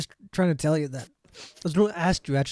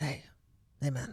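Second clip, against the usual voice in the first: very soft, hushed, close whisper; 11 dB quieter than usual. Retelling how a man comes up to you and speaks, whispering in your ear. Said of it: "he like whispers in your ear".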